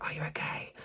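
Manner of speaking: whispering softly. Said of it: "she's whispering everything".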